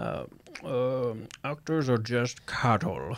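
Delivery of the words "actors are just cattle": slow, horrible, badly faked, drawn-out put-on voice. Quoting a director's line about actors: horrible Hitchcock impression. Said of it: "That's a horrible Hitchcock impression".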